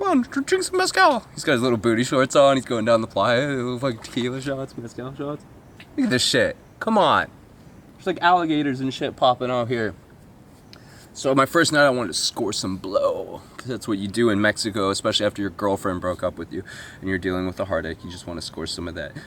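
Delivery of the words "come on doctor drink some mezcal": mocking, very high squealing put-on voice. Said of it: "He's like".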